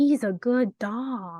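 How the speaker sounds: put-on talking cat voice. Retelling a funny movie line, trying an impression of Gigi. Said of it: "I wish I could do an impression of Gigi".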